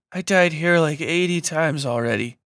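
muffled, muted, sloppy speech. Narrating a story, Bucky speaks while Dawes carries him: muted, sloppy voice. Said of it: "Bucky said in a muted, sloppy voice".

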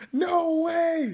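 mock very high, loud, shrill scream. Retelling how a friend reacted to a touchdown: imitating someone screaming.

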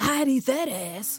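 acted-out, high, stretched-out hollered catcall yell. Recounting what one of a group shouted, retelling a top-of-lungs yell. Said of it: "yells at the top of his lungs".

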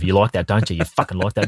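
mock talking through gritted teeth. Acting out pinning someone down: imitating talking through gritted teeth. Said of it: "Bit of gritted teeth".

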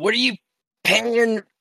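very high, shrill, yelled shout. Playing a character failing to roll something across the floor: yelling out. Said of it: "just yells out".

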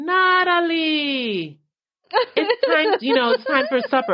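mock, very high, drawn-out long-distance calling yell. Retelling how mom called from the porch: imitating mom screaming a name. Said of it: "scream to all high heaven".

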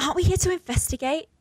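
put-on high, very posh, upper-class accent. Playing Blossom opposite a bogan Australian Buttercup, in a really posh accent. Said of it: "really posh one for Blossom".

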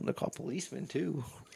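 muttering under breath. Acting out someone proposing a movie name, muttering under breath. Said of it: "I like how he's under his breath".

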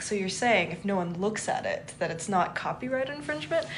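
ordinary delivery

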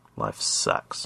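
whispered, hushed, breathy mutter under the breath. The narrator, waiting on the platform before another week in the reality mines, mutters. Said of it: "I muttered".

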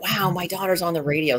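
delighted, thrilled, excited exclamation. Retelling her father's reaction to her being on the radio: imitating excited father. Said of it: "he was really excited".

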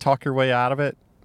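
ordinary talk

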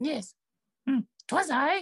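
very high, squeaky little goblin voice. Telling the listeners they see a little goblin, then answering as it: little goblin voice. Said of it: "you see a little goblin".

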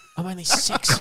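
soft, hushed, put-on whisper. Retelling a creepy online clip, imitating a girl whispering. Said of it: "it's like a chick whispering".

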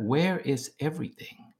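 mumbling under breath. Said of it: "under his breath, talking to himself".

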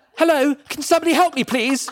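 put-on very high-pitched posh English accent. Retelling [name] calling for help while Mum was on the floor, incredibly English Hugh Grant voice. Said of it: "I went incredibly English. I turned into Hugh Grant".

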